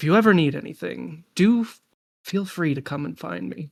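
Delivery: almost grandfatherly, fatherly grandpa-like tone. Game master voices a man talking to the player's character in the gardens, grandfatherly voice. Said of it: "he says in this almost kind of like grandfatherly like voice".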